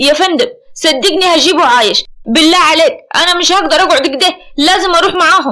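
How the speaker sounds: hot-tempered, heated, angry insistence. Amer answers his commanding officer in front of the other officers, angrily. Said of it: "عامر بعصبية".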